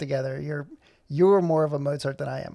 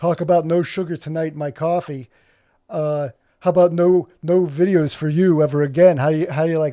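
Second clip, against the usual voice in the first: loud, booming radio-host delivery; 5 dB louder than usual. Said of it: "That's my impersonation of, uh, the Radio Hour guy".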